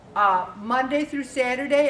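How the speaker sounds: ordinary talk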